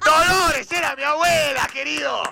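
high, offended, mock indignant shout.

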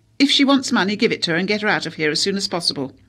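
loud, clipped, grand patrician voice, dismissive and rattled off. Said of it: "clipped patrician intonation when she was impersonating Laura Chase".

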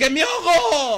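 mock pleading, high and slow.

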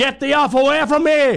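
very high mock screaming. Retelling how a fifteen-year-old girl with an axe yelled at a man, retelling a scream. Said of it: "And she's screaming".

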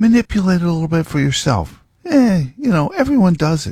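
high, tempting devil voice. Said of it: "he's whispering in your ear".

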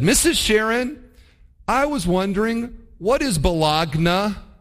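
loud, high, slow voice. Retelling asking the teacher a question in class: imitating a loud question. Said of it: "very loudly said".

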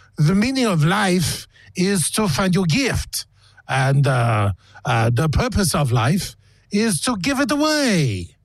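put-on French accent. Host reads a famous artist's quote for a guessing game, put-on French accent. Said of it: "I'm going to try another accent here".

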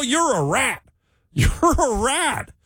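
slow, high, stretched-out, drawn-out yell. Retelling how a man ran up to a cart worker: retelling a yell. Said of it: "And he yells at him".

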